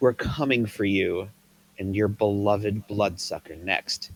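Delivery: ordinary delivery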